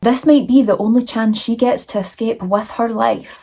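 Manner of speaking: plain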